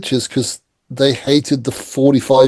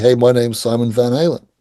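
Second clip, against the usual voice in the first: really bad put-on American accent. Retelling a stunt at the band's hotel: really bad american accent. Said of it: "put on a really bad American accent and say".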